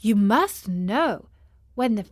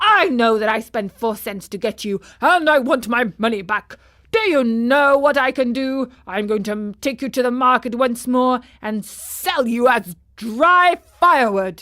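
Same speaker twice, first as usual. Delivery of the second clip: crying out in anger; 4 dB louder than usual. Narrator reading a man's reply to the marionette's story, angry. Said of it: "cried the man angrily. / cried the man angrily. / [name] had survived from being drowned in the sea and also escaped from the old fellow who wanted to sell him again. / cried the man angrily".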